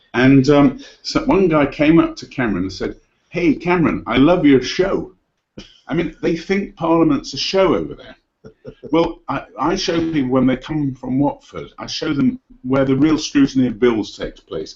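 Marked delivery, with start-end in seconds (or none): 3.2-5.1 badly done, lousy put-on American accent. Retelling a charity event, quoting a guy who greets Cameron, in a lousy American accent. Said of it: "Excuse my lousy American accent".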